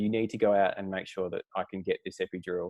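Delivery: ordinary talk, nothing marked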